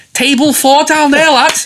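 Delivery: put-on loud, very high Scouse accent. Retelling what a man turned and said to them, the speaker does a scouse accent. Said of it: "I don't want to do a Scouse accent".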